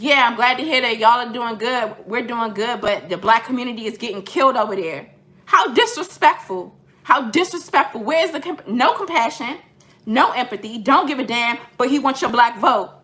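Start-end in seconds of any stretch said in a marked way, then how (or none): 0.0-5.1 mock facetious, cold, patronizing, condescending sarcasm. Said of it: "in a very, very cold, condescending, and facetious and sarcastic manner".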